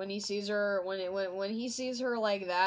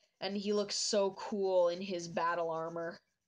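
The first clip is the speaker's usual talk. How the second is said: usual speaking voice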